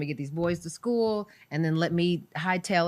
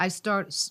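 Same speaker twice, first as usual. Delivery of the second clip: plain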